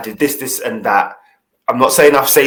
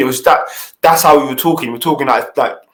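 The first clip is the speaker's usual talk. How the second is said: plain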